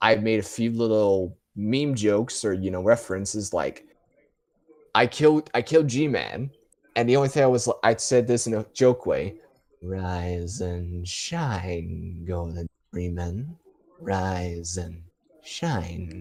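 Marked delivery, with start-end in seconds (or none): 9.8-16.2 low, very slow drawl, "shine" dragged out. Retelling a joke made in a game, imitating G-Man's voice. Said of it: "someone imitating his voice as a insult".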